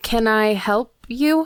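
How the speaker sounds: tearful, crying, words broken between sobs. A narrator voices a Firbolg crying among books in a library; speaking between sobs. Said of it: "In between sobs".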